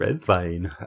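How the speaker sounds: put-on, mock German accent. Answering a request to say red wine in a german accent: put-on german accent. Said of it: "in a German accent?".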